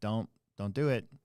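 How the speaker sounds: put-on scary-sounding voice. Retelling warning a shoplifter at the door: imitating own scary-sounding warning. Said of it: "I try to be as scary sounding as I can".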